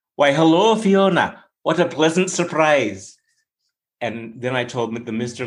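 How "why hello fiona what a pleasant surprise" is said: put-on, not-quite-right Scottish accent. Speaker retells giving a greeting, picturing a chubby little leprechaun: attempted Scottish accent. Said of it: "Scottish. We all want to hear Scottish".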